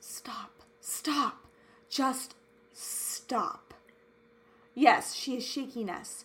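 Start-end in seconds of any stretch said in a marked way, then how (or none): 0.0-3.7 very slow, drawn-out, hushed whisper. Quoting what she says in an emotional video, whispering. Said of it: "she whispers".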